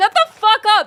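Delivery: bad put-on Irish accent, very high, shrill, loud. Speaker mimics what Irish friends say most, in a bad Irish accent. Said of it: "That's the best thing I can do in an Irish accent".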